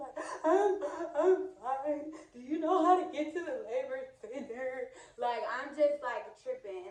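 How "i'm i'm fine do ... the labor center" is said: put-on, high, loud, tearful, hysterical panicked sobbing. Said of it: "I'm crying and I'm hysterical".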